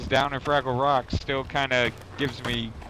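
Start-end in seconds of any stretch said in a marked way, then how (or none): none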